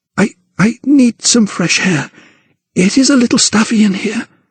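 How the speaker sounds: very high, panicky voice. Reading a novel aloud, a frightened woman asking to leave: panicked voice. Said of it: "a note of panic in her voice".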